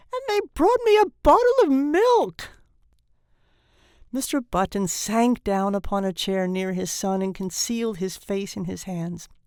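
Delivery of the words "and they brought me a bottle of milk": very high, shrill, complaining tone. Reading a story, an old newborn complains about his food: shrill protesting voice. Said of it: "his voice rose to a shrill note of protest".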